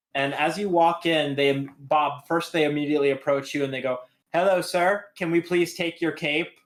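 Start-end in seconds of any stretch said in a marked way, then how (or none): 4.4-6.5 little mechanical robot gnome voice. Voicing little robot gnomes greeting a visitor: robot gnome voice. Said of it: "these little robot gnomes".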